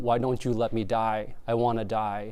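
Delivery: normal talking voice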